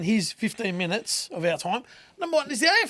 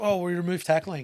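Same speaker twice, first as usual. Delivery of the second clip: ironic, sneering, sarcastic, mocking tone; 3 semitones lower, 3 dB quieter than usual. Proposing the only solution, deliberately sarcastic: sarcastic tone. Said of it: "I'm going to be really sarcastic".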